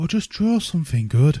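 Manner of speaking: put-on feminine voice. Announcing they'll go for the female voice, speaker uses a put-on female voice. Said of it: "Now we're going to go for the female voice".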